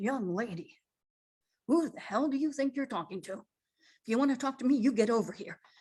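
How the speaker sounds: stern, no-nonsense mother voice. Retelling answering someone who threatened her family, in a put-on mother voice. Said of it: "I put on my mother voice".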